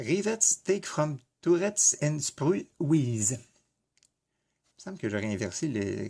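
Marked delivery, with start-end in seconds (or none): 0.0-3.3 English spoken with a French accent. Speaker reading the one English note in a booklet, French accent in English. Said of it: "c'est mon accent français qui parle anglais".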